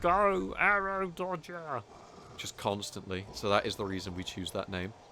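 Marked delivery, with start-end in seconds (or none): 0.0-1.8 put-on Cockney accent, pitched very high. Quoting a game character who kept repeating a line, in a Cockney accent. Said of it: "one guy with like a Cockney accent going".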